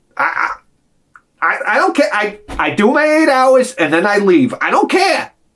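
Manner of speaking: slow, overly insistent, protesting-too-much voice. Doing an impression of the woman the speaker is describing: impression of her. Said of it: "This is my impression of her".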